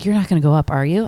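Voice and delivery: put-on whispered voice. Retelling a mother's question during communion at a funeral mass: imitating a whisper. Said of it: "whispers to me, she's like".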